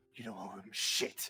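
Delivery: very low, seething anger through clenched teeth. Narrating a character who keeps walking away, angry through gritted teeth. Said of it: "With through fucking angered teeth".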